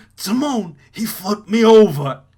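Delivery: loud, high-pitched crying wail through loud sobs. A player voices a warthog flipped over by the prince, crying Pumbaa voice. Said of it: "This poor warthog is crying its eyes out".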